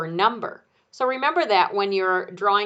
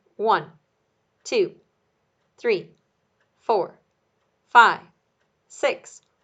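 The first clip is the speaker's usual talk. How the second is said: measured, steady, evenly spaced delivery; 4 dB louder than usual. Explaining how to count one number per second, steady counting. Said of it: "counting in a consistent manner".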